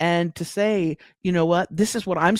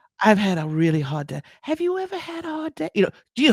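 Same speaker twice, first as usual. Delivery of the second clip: put-on vulnerable granny voice; 4 semitones higher than usual. Describing a comedian's videos as a granny, imitating a vulnerable granny. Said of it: "she's very vulnerable".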